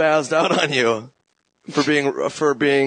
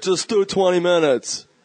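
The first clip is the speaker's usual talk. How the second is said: playful, teasing put-on voice; 4 semitones higher than usual. Retelling a phone call, imitating the other speaker: imitating the other speaker. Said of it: "I'm having fun with your impression".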